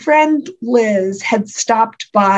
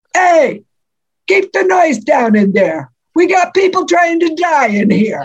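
put-on called out in a New Jersey accent; 6 semitones higher than usual. Retelling how a man across the hall yelled at them, imitated New Jersey accent. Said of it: "in his best imitation of a New Jersey accent".

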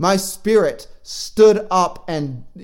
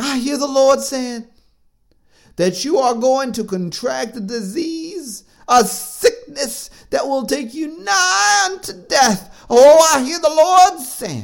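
put-on woman's voice, pitched higher; 8 semitones higher, 4 dB louder than usual. Retelling a dream where a woman delivers a prophetic word: imitating a woman prophesying in a dream. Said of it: "she was actually talking like this in the dream".

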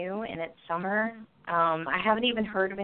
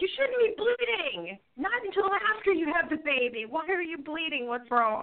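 full-on, high-pitched, drawn-out screaming; 8 semitones higher than usual. Retelling watching a movie and talking to a character: retelling own screaming at the screen. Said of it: "I'm sitting there screaming at her".

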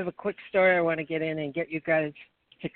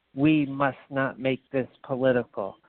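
mock thick, heavy Russian accent; 4 semitones lower than usual. Retelling what a man at a meeting said to them, imitating a thick Russian accent. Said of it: "this thick, thick Russian accent".

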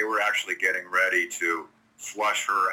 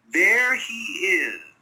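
small, tiny, very high-pitched little voice; 4 dB louder than usual. Retelling hearing Macy call out down the hall, imitating Macy's little high voice. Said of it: "this little high-pitched voice".

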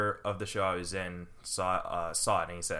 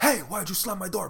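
put-on very high, shrill yelling; 12 semitones higher, 4 dB louder than usual. Retelling how a man yelled at him over the slammed door, retelling a yell. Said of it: "he's like yelling at me".

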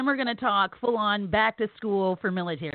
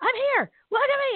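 put-on very high, overexcited childlike yelling screech. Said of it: "he was screaming".

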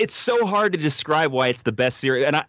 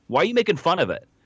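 mock angry snap, higher; 4 semitones higher than usual. Retelling a scene where Kira snaps at Bashir: snapping angrily. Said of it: "she snaps at him".

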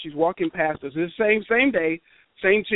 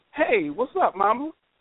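awkward, fumbling, pitched-up voice; 8 semitones higher than usual. Retelling how he greeted Regina as she walked by, retelling an uncool greeting. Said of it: "in the non-coolest way".

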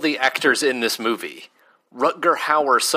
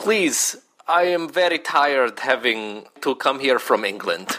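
put-on German accent. Recalling doing impressions of Mina from Dracula, German-accented Mina voice. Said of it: "we sort of made her German".

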